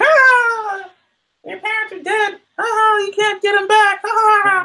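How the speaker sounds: very high, taunting ape monster voice.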